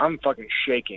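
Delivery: ordinary talk, nothing marked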